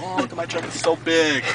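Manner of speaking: normal talking voice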